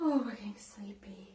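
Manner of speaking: soft, sleepy whisper.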